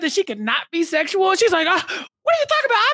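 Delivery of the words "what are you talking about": flustered, stammering disbelief, pitched way up. Retelling a reality show argument, imitating someone stuttering in disbelief. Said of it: "stuttering at the idea".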